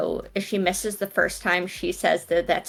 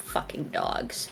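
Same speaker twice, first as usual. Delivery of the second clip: hushed, whispered snarl under the breath; 7 dB quieter than usual. Player voicing her character reaching for her blade against dogs, snarled under her breath. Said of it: "under her breath, she snarls out".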